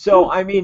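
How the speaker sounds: usual speaking voice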